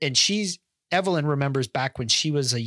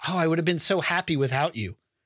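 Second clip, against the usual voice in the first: put-on excited character voice; 2 semitones higher than usual. Retelling a movie scene where she's all excited: imitating excited character. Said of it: "she's all excited".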